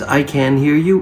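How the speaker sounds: ordinary delivery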